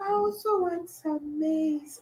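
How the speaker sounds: gentle, very soft, slow, high, drawn-out voice. Retelling what a woman said to a man selling corn: imitating a very soft voice. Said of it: "let me try, like, so".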